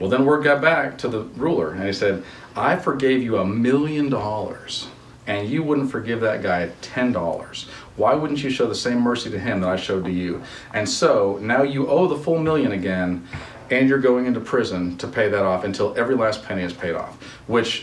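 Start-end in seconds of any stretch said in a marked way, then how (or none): none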